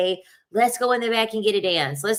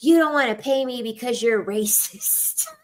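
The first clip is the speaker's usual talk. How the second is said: imitated loud voice, higher; 4 semitones higher than usual. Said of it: "she would say it real loud".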